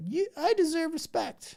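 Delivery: put-on, very high, nice and calm tone. Mocking people who say awful things calmly, imitating their nice calm tone. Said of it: "in a nice, calm tone of voice".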